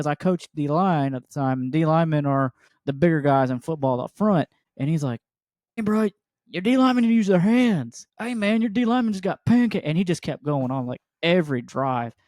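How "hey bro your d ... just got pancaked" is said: mock jeering heckling yell, high-pitched. Retelling a heckler behind the fence: imitating a heckler yelling. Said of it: "somebody behind the fence just yelling".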